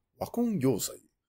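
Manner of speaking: very quiet, high Japanese movie-trailer narrator voice. Explaining a japanese expression, saying it like a japanese narrator voice. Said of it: "you always have to say it like a Japanese narrator".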